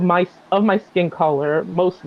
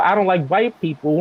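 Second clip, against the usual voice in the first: ordinary delivery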